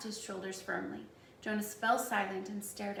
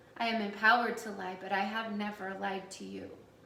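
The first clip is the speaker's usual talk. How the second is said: ordinary delivery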